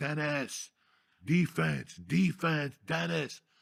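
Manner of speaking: very slow, high, dragged-out yelling. Retelling someone in a wheelchair yelling at Dennis: imitating Marino yelling. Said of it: "yelling at Dennis".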